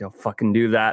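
quiet muttering under the breath. Retelling Patrick watching the speaker climb, imitating Patrick muttering under breath. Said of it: "Patrick's under his breath is going".

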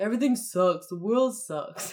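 acted sad-sack, gloomy, mopey grumbling. Acting out two friends complaining together, imitating a negative friend. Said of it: "You like my impression there?".

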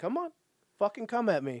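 goading, high, swooping, in-your-face taunting jeer. Retelling how a villain taunts his opponent: imitating a taunt. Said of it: "taunting Tommy".

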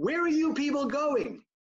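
high-pitched, called-out yell. Retelling a stranger calling out from a doorway: imitating a man yelling. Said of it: "some guy yells out".

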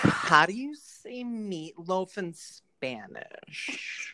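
very slow, drawn-out, deliberate put-on voice. Saying a line on request in another's voice: Cam's voice. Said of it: "in Cam's voice".

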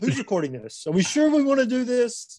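put-on scared, nervous voice, high rising intonation. Replaying own words from last week's episode: imitating own fearful voice. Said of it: "you can hear the fear in my voice".

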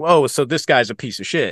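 plain

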